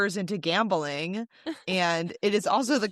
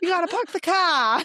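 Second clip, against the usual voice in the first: loud, very high, put-on Boston accent; 10 semitones higher, 5 dB louder than usual. Showing the boston accent practiced while down there: boston accent. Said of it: "I was practicing mine when I was down there".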